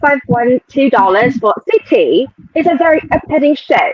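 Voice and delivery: put-on British accent. Reading a viewer's super chat aloud on request, put-on British accent. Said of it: "read the super chat in your British accent".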